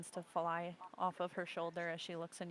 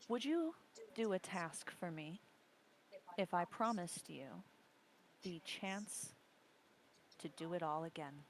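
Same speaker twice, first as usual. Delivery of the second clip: whispering in a put-on character voice. Game master voicing Dahlia in the back of the player's ear, Dahlia whispering. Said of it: "you hear Dahlia in the back of your ear like a whisper".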